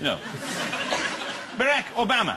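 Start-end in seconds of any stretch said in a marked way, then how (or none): 1.6-2.4 higher-pitched mock Irish accent. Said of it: "he sounds Irish".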